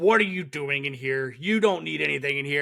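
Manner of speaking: put-on harsh scolding tone. Retelling a scene, the speaker acts out a scary guy berating a kid: mock-harsh scolding. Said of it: "he's giving this kid the business".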